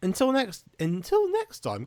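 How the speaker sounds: high, loud voice breaking up mid-phrase. Signing off a channel video to viewers, voice going crazy. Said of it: "my voice has gone crazy".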